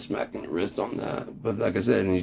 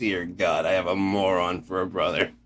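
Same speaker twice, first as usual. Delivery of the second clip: ordinary talk, nothing marked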